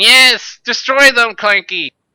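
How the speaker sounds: put-on very high, very loud withered old goblin voice. Voicing an old goblin who urges a robotic creature on: old goblin voice. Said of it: "withered, old goblin with an eye patch ... going".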